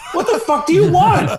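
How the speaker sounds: exasperated, fed-up mock outburst breaking into laughter.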